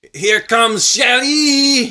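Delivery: loud, high French Canadian DJ announcer hype. Playing a club DJ on request and asked the stripper's name, French Canadian strip club DJ. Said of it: "do the French Canadian strip club DJ announcing".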